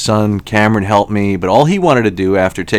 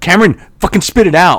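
mock, very high-pitched, freaked-out, angry outburst; 10 semitones higher, 4 dB louder than usual. Father retelling what he told his son Cameron on speakerphone, retelling angry outburst. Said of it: "I'm angry".

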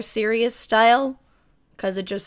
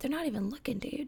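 mock dejected mutter, much quieter, higher; 3 semitones higher, 17 dB quieter than usual. Speaker acts out a fanboy being ignored, imitating a dejected mutter under breath. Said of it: "so dejectedly and under his breath".

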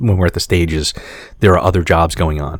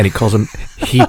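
ordinary talk

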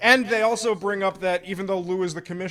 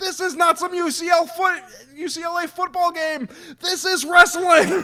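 mock very shrill, raised, loud shouting; 10 semitones higher, 5 dB louder than usual. Retelling a wrestling match moment, imitating someone yelling. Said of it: "starts yelling".

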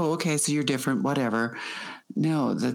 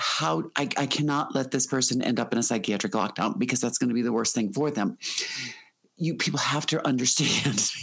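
ordinary talk, nothing marked

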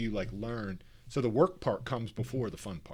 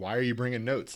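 put-on, somewhat sarcastic tone; 3 dB louder than usual. Retelling what somebody asked a woman bringing notes to meetings, kind of sarcastic. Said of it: "Like kind of like sarcastically".

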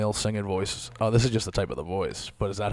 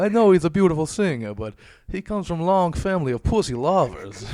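clumsy, badly done put-on Greek accent, pitched high; 9 semitones higher, 5 dB louder than usual. Imagining what the father would say about his son, put-on Greek accent. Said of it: "I think I'm sounding Greek there".

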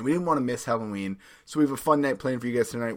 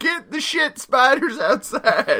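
fake Southern accent, very high and shrill; 14 semitones higher, 8 dB louder than usual. Joking about spiders belonging outside, in a put-on Southern accent. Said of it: "giving myself a Southern accent".

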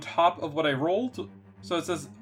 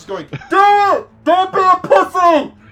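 put-on yell, much higher and louder; 15 dB louder than usual. Picturing Assad's reaction to the monster, imitating Assad yelling. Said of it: "Why are you yelling like that?".

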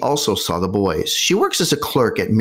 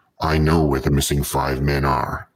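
put-on very deep, low male voice; 7 semitones lower than usual. Retelling a caller phoning a woman, imitating a very deep man's voice. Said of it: "very deep man's voice says to her".

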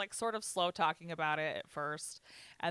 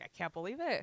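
put-on tearful voice, choking up; 3 semitones higher than usual. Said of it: "got, like, choked up".

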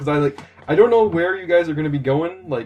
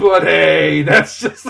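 words dissolving into loud laughter, very slow; 6 dB louder than usual. Trying to finish a sign-off sentence, laughing while talking. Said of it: "I can't finish that sentence without laughing".

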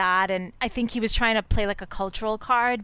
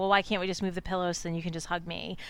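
mock aggrieved, upset, complaining tone; 4 semitones lower, 8 dB quieter than usual. Retelling a scene in bed with pillows between them: imitating someone upset. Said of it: "she's really upset".

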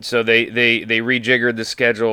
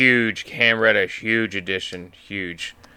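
very slow, sarcastic, exaggerated over-praise. Reacting to a trade for a player: sarcastic. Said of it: "I hope the sarcasm comes through".

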